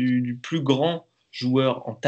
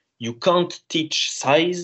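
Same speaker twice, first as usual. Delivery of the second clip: fake German accent with raised pitch; 6 semitones higher than usual. Quoting a very wise man's saying: put-on german accent. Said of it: "avec un bel accent".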